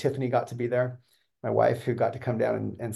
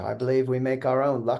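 put-on British accent. Retelling what Richard said about luck: imitating Richard's British accent. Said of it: "he said in his British accent".

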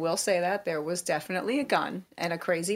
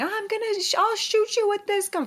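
mock piercing scream, very high pitch; 3 dB louder than usual. Recounting a woman's breakdown while on the phone with the speaker's dad, retelling her screaming. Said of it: "She was screaming".

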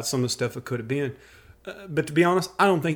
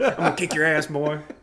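rough, rasping put-on voice. Imitating his brother's way of talking: imitating a raspy voice. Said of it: "he's kind of got that raspy voice".

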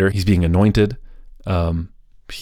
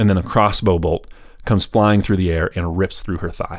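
ordinary talk, nothing marked

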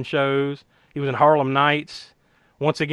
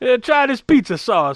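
high-pitched put-on Italian accent; 9 semitones higher, 4 dB louder than usual. Joking about an Italian actor cast as a German: mock Italian accent. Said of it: "This is racist".

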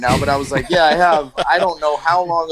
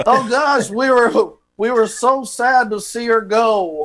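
put-on Southern-accented voice, pitched higher; 7 semitones higher than usual. Playing a former boss giving a phone job reference, Southern accent. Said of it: "I don't know why we're Southern all of a sudden".

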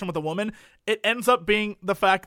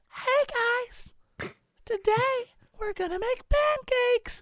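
high, sweet, cooing ASMR-style voice; 4 dB quieter than usual. Complaining about ASMR videos, the speaker imitates their narrators: imitating an ASMR video voice. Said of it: "the voices that they use for those ASMR videos".

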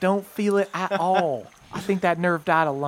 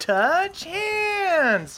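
very high yell, "hands" drawn out; 12 semitones higher than usual. Voicing a character who comes over to the group: character yelling. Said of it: "Derlin comes over and yells".

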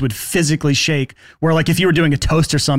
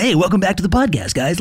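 overconfident, salesman-style radio DJ voice; 3 semitones higher than usual. Describing the overconfident podcaster type, in a radio DJ voice. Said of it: "kind of like the radio DJ voice kind of guy".

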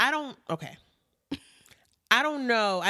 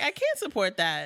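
normal talking voice

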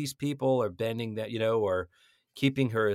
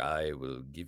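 very low, rich baritone; 11 semitones lower, 8 dB quieter than usual. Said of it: "rich baritone, Darth Vader-y kind of voice".

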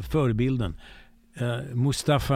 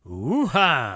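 with real force in the voice. Asked by the other speaker to say it again, exclaiming with real force in the voice. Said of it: "med lite riktigt tryck i rösten".

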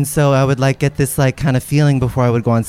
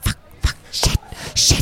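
soft, breathy whisper under the breath. Recounting to friends what a group of performers did, retelling a whisper. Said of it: "they like were like whispering like".

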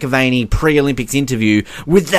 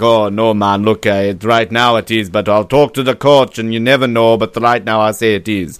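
terrible put-on Jamaican accent; 4 semitones lower than usual. Retelling an interview answer in a terrible Jamaican accent, imitating Usain Bolt. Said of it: "That was a terrible Jamaican accent".

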